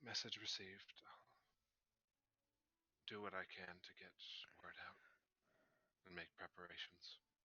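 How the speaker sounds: hushed, quiet, soft-spoken voice. After a long pause, replying to a received message, in a quiet voice. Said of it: "you hear their quiet voice respond".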